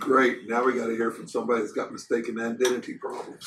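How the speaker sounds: soft grumbling mutter under the breath. Playing a character reacting to a mistaken identity claim: muttering under breath. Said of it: "And I'm muttering".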